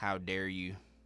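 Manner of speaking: put-on angry, mad voice. Imitating a daughter upset that painting happened without her: imitating his angry daughter. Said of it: "she's, like, straight mad".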